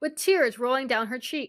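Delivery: plain reading voice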